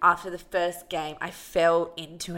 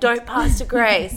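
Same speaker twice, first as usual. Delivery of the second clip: put-on screaming, higher and louder; 5 semitones higher, 9 dB louder than usual. Retelling how a mum on the court screamed at players: imitating a mum screaming. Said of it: "running down the court screaming".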